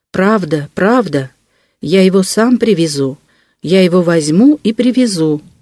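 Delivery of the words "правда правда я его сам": ordinary delivery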